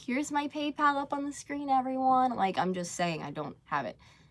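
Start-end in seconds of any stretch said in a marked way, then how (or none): 0.0-2.3 high-pitched, mock begging voice. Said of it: "So that doesn't mean I'm like".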